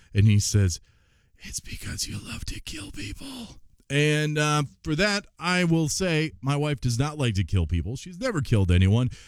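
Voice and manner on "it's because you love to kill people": soft whisper, high-pitched. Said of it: "He whispered in her ear".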